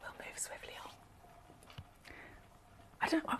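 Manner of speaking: very quiet, hushed whisper. Moving swiftly on to the next part of the show, whispering. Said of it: "I don't know why I'm whispering".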